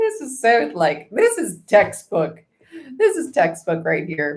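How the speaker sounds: speaking through laughter, pitch swooping. Reading the Four of Cups and Seven of Swords, laughing while talking. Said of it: "I'm sorry I'm laughing".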